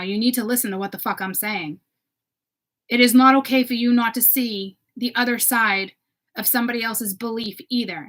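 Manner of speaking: pissed-off, firm, heated, angry voice. Telling that community to see the other side, getting angry. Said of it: "I'm getting pissed right now".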